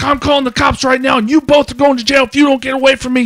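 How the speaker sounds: mock screaming. Retelling what a man on his phone screamed at them, retelling a scream. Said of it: "And he's like screaming".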